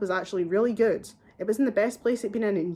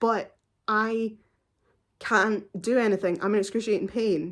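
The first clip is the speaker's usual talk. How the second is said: plain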